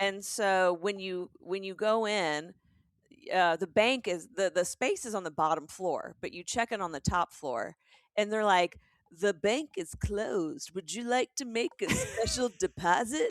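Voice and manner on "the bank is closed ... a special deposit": sultry, suggestive come-hither voice with sexual undertone. Retelling what the check-in staff at a speakeasy say: imitating a sexual-sounding voice. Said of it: "That sounds sexual".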